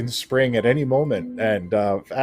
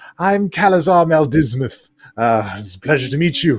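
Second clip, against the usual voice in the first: frail, skeletal-sounding character voice; 2 semitones higher than usual. Voicing a frail, spindly drow riding a shadow dragon: frail drow character voice. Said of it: "And he says to us".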